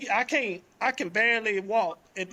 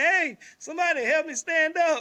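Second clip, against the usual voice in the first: mock desperate, high, urgent yell; 7 semitones higher than usual. Retelling a fall in a jacuzzi room: retelling a scream for help. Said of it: "I'm screaming like".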